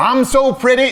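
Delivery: mock boastful tone.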